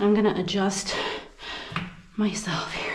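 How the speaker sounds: winded, panting between words.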